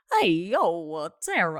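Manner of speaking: very slow, deliberate, every word drawn out. Guessing a killer clown's voice, then noticing it's Chris Walken. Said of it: "that's Chris Walken".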